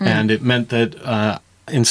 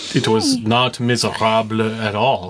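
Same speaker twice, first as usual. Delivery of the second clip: put-on French-accented English delivery. Thanking their spouse in a birthday shout-out, in a French accent. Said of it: "That your French accent, wow".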